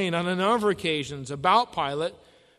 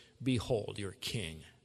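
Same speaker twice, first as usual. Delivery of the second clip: scornful, very low, very quiet mocking tone; 9 semitones lower, 11 dB quieter than usual. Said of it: "just hear the mocking coming from his voice".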